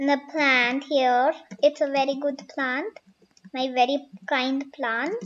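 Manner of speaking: ordinary talk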